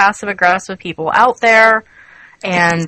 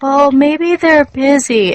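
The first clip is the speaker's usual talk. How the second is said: put-on high, whiny, unconvinced tone; 7 semitones higher than usual. Retelling how people say others are busy: imitating a whiny tone. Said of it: "it's always in that whiny tone".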